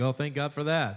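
slightly sarcastic, with a sarcastic edge. Showing how a forced thanks to God can come out: sarcastic. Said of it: "it even comes out a little bit sarcastic".

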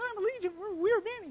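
very high, soft, tiny, squeaky voice. Picturing how Legion did not sound answering Jesus, in a Mickey Mouse voice. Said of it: "Sorry, my Mickey Mouse voice there".

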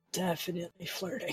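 muttered under breath. Voicing a character in a role-play scene, muttered under his breath. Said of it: "Muttered under his breath".

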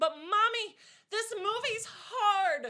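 put-on kid yell, very high, very loud and very slow. Retelling what a child said out loud: imitating a kid yelling at top of lungs. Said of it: "real top of her lungs".

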